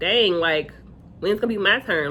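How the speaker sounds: plain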